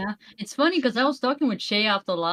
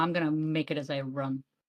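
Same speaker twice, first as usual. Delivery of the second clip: ordinary talk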